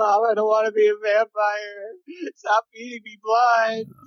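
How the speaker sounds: mock pleading through tears, high and crying. Retelling a feverish childhood plea to mom, imitating own past crying. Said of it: "So I kept crying and, like".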